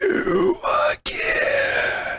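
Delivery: very high, drawn-out eerie whispery voice.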